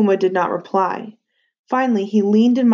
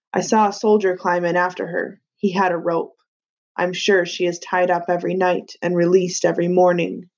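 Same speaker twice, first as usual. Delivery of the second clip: ordinary delivery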